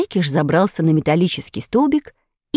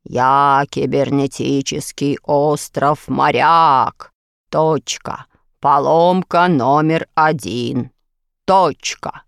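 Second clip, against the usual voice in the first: thick, deep bass voice with slow, measured words; 4 semitones lower than usual. Narrator reads the cybernetic island answering the little fidget; deep bass voice, slow words. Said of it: "густой, басовитый голос. Медленно выговаривая слова".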